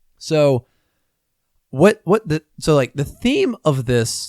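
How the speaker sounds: slow voice, cracking and breaking. Mid-explanation about a card game, voice cracking. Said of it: "I think my voice just cracked".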